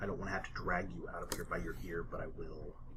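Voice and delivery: soft, low, hushed, menacing librarian voice.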